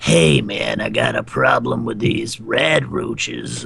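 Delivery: very low, creaky, raspy, swooping ghoul growl. Describing a guy found on a farm, emulating a ghoul voice. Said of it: "ghoul voice?".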